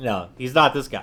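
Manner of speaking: plain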